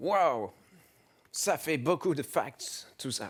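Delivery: put-on American accent on French words. Reacting to a long explanation from the other speaker, in an American accent. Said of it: "Accent américain, non?".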